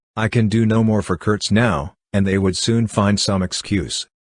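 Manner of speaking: plain reading voice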